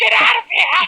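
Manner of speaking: very high, shrill cartoonish voice. Prank calling as a cartoon villain yelling at Destro: Cobra Commander voice. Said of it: "and this is Cobra Commander".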